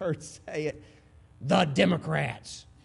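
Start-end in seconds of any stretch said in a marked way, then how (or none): 1.4-2.6 mock, angsty little boy voice. Retelling how a little boy stood up and answered, imitating an angsty little boy. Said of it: "with all the angst that a little boy could".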